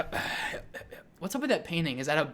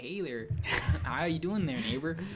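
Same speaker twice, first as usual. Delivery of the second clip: put-on Michigan accent. Teasing how Michigan people talk to a co-host, Michigan accent impression. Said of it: "Michigan people... their accent's like".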